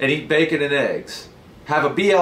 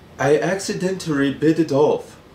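exaggerated Taiwanese accent. Reading out a news story, voicing the wife's explanation: stereotypical Taiwanese accent. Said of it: "I don't know if Taiwan people talk like that".

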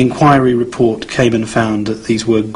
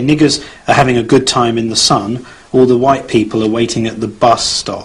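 ordinary talk, nothing marked

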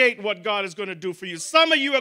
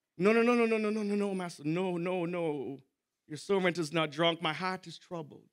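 mock tearful crying woman's voice, lower and quieter; 5 semitones lower, 12 dB quieter than usual. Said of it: "shaking and mumbling and crying".

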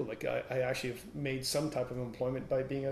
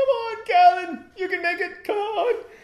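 put-on shrill, very high, very loud laughing taunt; 14 dB louder than usual. Callan retells running from a charging moose while Andy eggs him on, imitating Andy laughing. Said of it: "And he's laughing".

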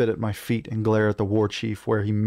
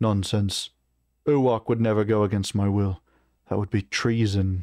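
ordinary delivery, nothing marked

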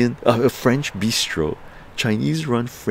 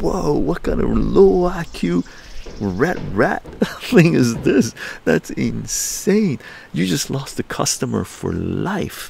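slow mock incredulous talk through laughter; 4 semitones higher than usual. Retelling a store still requiring masks, acting out laughing while talking. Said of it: "I started laughing".

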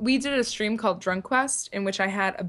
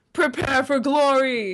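slow, louder, attempted Scottish accent. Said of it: "in a Scottish accent the best you can".

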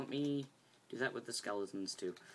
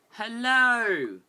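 very high, very loud put-on British accent; 9 semitones higher, 14 dB louder than usual. Speaker greets the audience at the start, in a put-on British voice. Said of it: "I don't know why I'm using my British voice".

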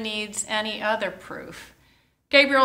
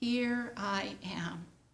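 very soft, quiet, hushed, barely spoken voice; 12 dB quieter than usual. Imagining how a woman spoke her words, the speaker voices them very quietly. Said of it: "I hear them as a very quiet voice saying".

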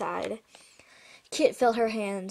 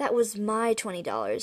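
ordinary delivery, nothing marked

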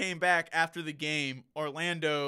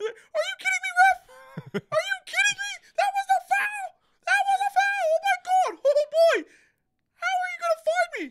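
very high, squeaky, loud cartoon yell; 8 dB louder than usual. Picturing a man screaming at the ref during a game, in a Mickey Mouse voice. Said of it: "all I could picture when he was screaming was like a Mickey Mouse voice".

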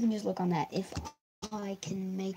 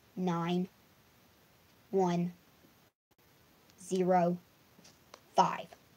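much slower, lower pitch. Speaker repeats their friend code once more for listeners, saying it slower. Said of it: "I'll say that a little slower".

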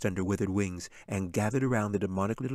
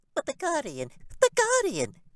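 piercing, very high, swooping imp-like screech. The imp flutters up on bat-like wings and cries out, a screeching imp. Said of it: "He screeched".

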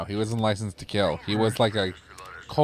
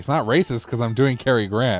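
usual speaking voice

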